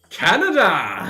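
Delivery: goofy put-on silly voice, high and loud. Answering a request to do the funny voice: funny voice. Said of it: "Do the funny voice".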